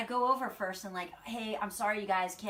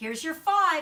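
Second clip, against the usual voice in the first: very loud, high, pointed tone; 7 semitones higher, 9 dB louder than usual. Retelling handing a customer her money back: retelling a loud eye-rolling line. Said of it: "really loud with my eyeballs are rolling".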